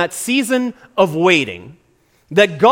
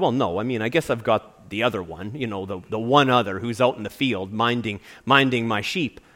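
lower, softer sheepish voice. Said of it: "he kinda sheepishly said".

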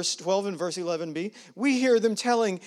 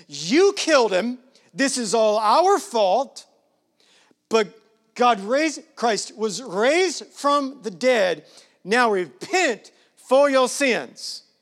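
bold, unflinching, raised voice; 4 semitones higher, 6 dB louder than usual. Retelling the apostle's sermon to the people: bold voice as Peter. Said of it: "I'm sure he's got some boldness in his voice".

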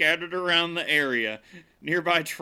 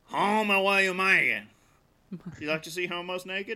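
put-on bayou Cajun accent character voice; 3 semitones higher than usual. Joking about Cajun accents, slipping into a put-on Cajun accent. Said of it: "I immediately slip into, uh, Waterboy or, um, Joe Dirt".

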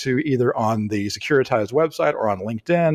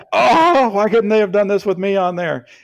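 loud, high-pitched screaming yell; 8 semitones higher, 6 dB louder than usual. Imitating an absent co-host listening in his car: imitating Ben screaming. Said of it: "He's screaming in his car right now".

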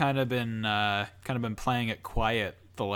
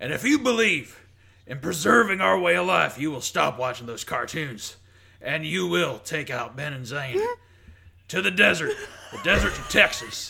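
put-on, higher-pitched conspiracy-ranter voice; 5 semitones higher, 4 dB louder than usual. Answering a request to rant about the show: Alex Jones impression. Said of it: "can you do an impression of Alex Jones".

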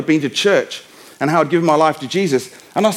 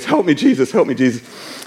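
mock, slow, stressed-out pleading, said twice; 3 semitones lower than usual. Retelling what a boy at the respite centre says when stressed: imitating a stressed-out plea. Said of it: "when he stresses out".

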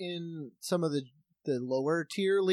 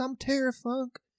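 put-on well-mannered, genteel Texan accent, pitched a touch higher; 8 semitones higher than usual. Giving viewers backstory on a wrestler, doing his voice: Terry Funk voice. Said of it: "He kinda talks like this".

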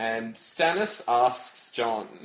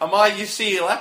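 mock Australian accent, higher and louder; 9 semitones higher, 8 dB louder than usual. Joking about an Australian version of the scene: put-on Australian accent. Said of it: "Australian version of Game of Thrones".

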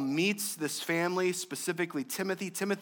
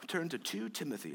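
put-on British accent; 7 semitones lower, 11 dB quieter than usual. Joking about how British people name the letters: put-on British accent. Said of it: "I don't know if that wasn't a British accent".

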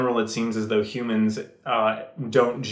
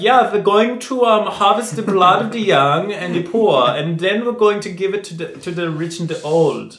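fake German accent, higher, louder; 8 semitones higher, 7 dB louder than usual. Imitating a man described as totally evil, fake german accent. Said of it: "that's why I did that accent".

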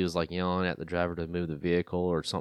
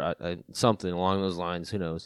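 plain

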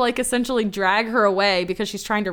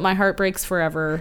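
plain

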